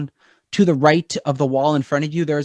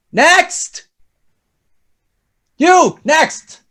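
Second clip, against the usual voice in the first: very high, loud, barked shout; 14 semitones higher, 7 dB louder than usual. Narrating, a tiefling's voice calls from down the hall: shouting tiefling. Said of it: "you hear this voice shouting down from the tiefling".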